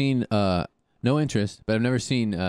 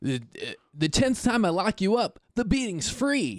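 very high voice of a twenty-something guy; 10 semitones higher than usual. Quoting a line said to Spider-Man, sounding like a 22-year-old boy. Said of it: "you sounded like a 22-year-old, like, boy".

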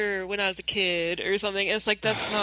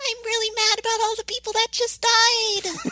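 put-on very high, cute, chirpy genki-girl voice; 13 semitones higher than usual. Imitating a character reacting to deaths: Ruby's cute voice. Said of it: "she still has to talk like this".

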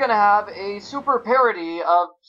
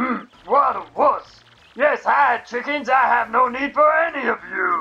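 attempted growly monster voice, puppet-like; 3 semitones higher than usual. Reading game dialogue aloud while playing, growly Bowser voice. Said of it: "That's my Bowser voice. I'm trying to make him growly".

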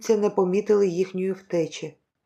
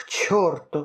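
much lower-pitched voice; 5 semitones lower than usual. The american answers his companion's proposal, swearing. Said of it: "вилаявся Гаррі".

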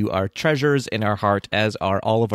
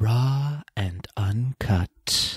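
glowing, ethereal, otherworldly delivery floated out; 3 dB quieter than usual. Echoing the bonus episode title: ethereal Galadriel voice. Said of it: "It was very ethereal".

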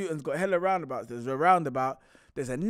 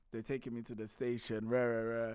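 usual speaking voice

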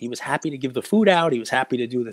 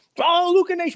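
very high, shrill, pitched-up street-vendor style yell. Retelling how someone yelled at people taking free food: imitating Daryl yelling. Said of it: "came over and started yelling".

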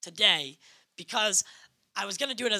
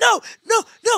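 very high-pitched screaming yell; 12 semitones higher, 6 dB louder than usual. Recalling watching a show, retelling screaming at the TV. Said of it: "I was like screaming at the TV".

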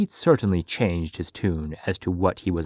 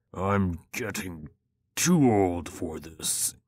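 slow, drawn-out, complaining groan. Reading Aldrich's line as he pushes open the wide doors: groaning. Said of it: "he groaned as he pushed open the wide doors".

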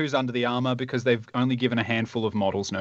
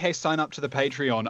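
ordinary talk, nothing marked

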